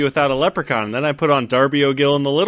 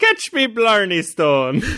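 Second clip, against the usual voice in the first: put-on bad Irish brogue, sing-song and high; 6 semitones higher than usual. Podcast host greeting the co-host at the start of an episode, in a bad irish accent. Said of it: "So many bad accents this episode".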